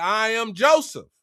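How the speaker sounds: normal talking voice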